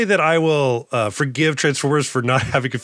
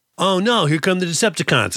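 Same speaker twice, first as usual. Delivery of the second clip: put-on high, playful young child's voice; 5 semitones higher than usual. Imagining a kid playing with the toy robot: kid voice. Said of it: "is my kid voice".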